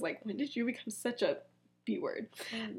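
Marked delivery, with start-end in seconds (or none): 0.0-1.4 acted mutter under breath, much quieter. Retelling a story scene as a character leaves, retelling a mutter under breath. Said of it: "under his breath".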